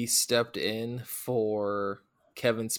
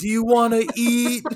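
very high, very loud, shrill, drawn-out scream; 12 semitones higher, 9 dB louder than usual. Retelling a movie scene where one character screams a question in an old woman's face: imitating Michael Shannon screaming. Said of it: "He's just screaming at her".

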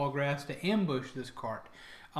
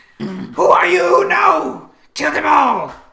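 shrieking creature voices, higher and louder; 12 semitones higher, 16 dB louder than usual. Voicing the surviving Kinku as they react to the kill: shrieking Kinku voices. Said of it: "You can hear the rest of them shriek".

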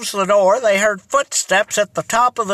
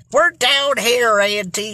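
ordinary delivery

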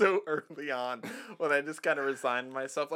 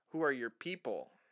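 ordinary delivery

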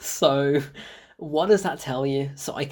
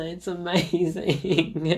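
ordinary talk

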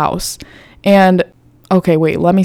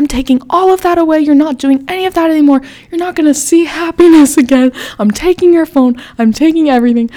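play-acted shrieking, screeching scream, very high-pitched; 9 semitones higher than usual. Retelling a punishment being announced, imitating someone screaming. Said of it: "looking at her scream at me".

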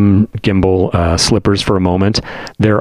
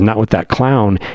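usual speaking voice

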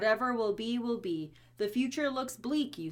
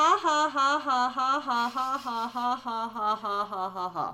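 loud, mechanical computer-voice laughter, text-to-speech; 3 semitones higher, 5 dB louder than usual. Reading a written laugh exactly as it's written, like a text-to-speech voice. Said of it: "You sounded like a text-to-speech".

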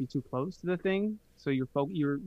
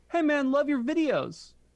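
high yell, called out loud; 11 semitones higher, 3 dB louder than usual. Retelling how a guy called out from across a crosswalk: imitating someone yelling. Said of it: "the guy yells".

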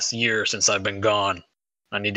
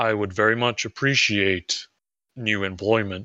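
very low, stilted, awkward alien goon voice. The narrator voices a four-armed alien goon addressing the players: very low, awkward tone. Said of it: "speaks kind of awkwardly and go at it with a very low tone".

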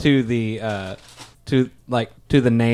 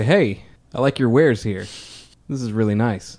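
pushy, hard-selling salesman delivery. Acting a character who walks in to pitch herbal pills: salesman pitch. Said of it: "I bet you've never seen a real salesman really go after it".

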